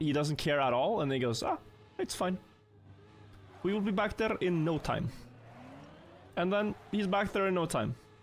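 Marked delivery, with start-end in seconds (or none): 1.4-5.1 slight put-on Eastern European accent. Speaker quoting a man who doesn't care at all, with a bit of Eastern European accent. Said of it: "with a bit more Eastern European accent".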